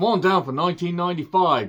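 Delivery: terrible fake Australian accent, high-pitched. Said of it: "that was a terrible accent".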